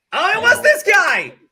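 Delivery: excited, high, loud, slow, drawn-out shout.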